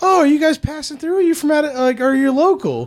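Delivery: very high, terribly courteous, polite lady's voice. Retelling the lady's questions to the group: imitating a very polite lady. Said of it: "she was so polite about it".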